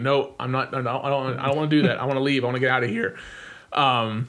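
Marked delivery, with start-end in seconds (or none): none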